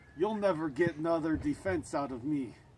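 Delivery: put-on, bad Russian accent, kept soft. The aggressor, confronted by the one chasing him, answers in a bad Russian accent. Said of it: "What's with the Russian accent? The bad Russian accent".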